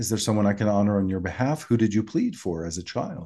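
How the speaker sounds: ordinary talk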